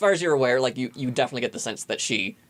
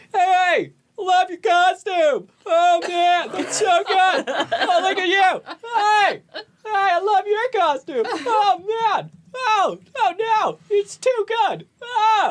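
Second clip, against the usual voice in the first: loud, very high hollering, oh stretched long; 6 dB louder than usual. Narrator voices dude bros descending outside your window, dude bros yelling. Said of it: "dude bros yelling at each other".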